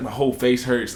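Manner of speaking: ordinary talk, nothing marked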